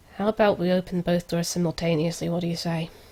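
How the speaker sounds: murmuring aside, kept close. A player's character leans in to the rest of the group, murmuring. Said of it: "leans in and murmurs".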